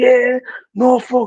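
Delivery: put-on triumphant cheering scream. Retelling a fan after the knockout: imitating a fan screaming. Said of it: "starts screaming".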